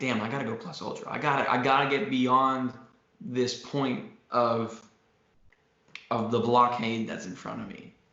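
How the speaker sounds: ordinary talk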